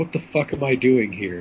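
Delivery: ordinary delivery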